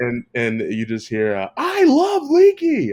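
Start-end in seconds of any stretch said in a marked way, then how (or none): 1.6-2.9 excited screaming call, very high and very loud. Recalling a basketball commentator's call after clutch free throws, retelling a commentator's scream. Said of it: "I keep screaming".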